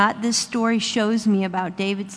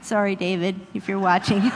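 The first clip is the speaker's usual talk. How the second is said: ordinary delivery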